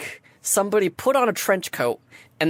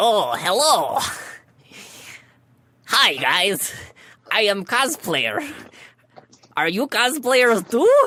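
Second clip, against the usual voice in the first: disguised goblin character voice; 2 semitones higher than usual. Voicing goblins in a trench coat who greet the players. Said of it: "and you hear".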